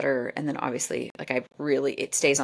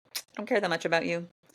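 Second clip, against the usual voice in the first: ordinary talk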